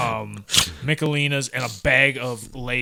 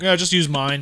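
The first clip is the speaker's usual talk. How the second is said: put-on casual, nonchalant tone, higher; 4 semitones higher, 4 dB louder than usual. Retelling a reply from the one who lived upstairs: imitating someone nonchalant.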